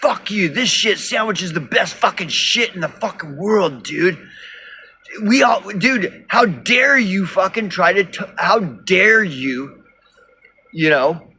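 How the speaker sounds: put-on angry ranting. Imitating pissed-off commenters defending their choice: imitating pissed-off users. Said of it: "get pissed off".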